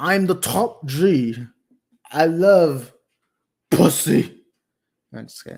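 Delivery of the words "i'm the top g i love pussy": words dragged out, done badly. Trying again on stream: bad Andrew Tate voice. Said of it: "I can't do any Andrew Tate voice".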